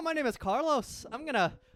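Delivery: very high, put-on Irish accent. Joking around on a podcast, a host slips into a fake Irish accent. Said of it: "That was Irish".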